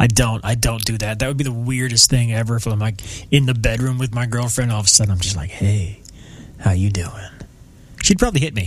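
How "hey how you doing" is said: smooth jazzy put-on voice, lower and slower. Imagining greeting his girlfriend in the bedroom, in a smooth jazz voice. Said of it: "my smooth jazz voice".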